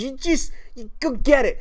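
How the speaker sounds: put-on high babyish first-words voice. Quoting what she said, babyish like a baby's first sentence. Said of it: "she literally sounded like a, a, a baby who puts together their first sentence".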